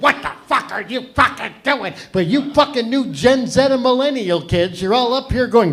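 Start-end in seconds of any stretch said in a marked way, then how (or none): 0.0-1.9 imitated confrontational voice, higher. Retelling how other comics grabbed anyone with notes: imitating attacking older comics. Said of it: "They'd grab you like a pack of pumas and go".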